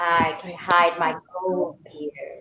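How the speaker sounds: very low, realistic, understated evil villain voice. Repeating the villain line after the teacher: realistic evil villain. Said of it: "You can still do it in a more realistic way".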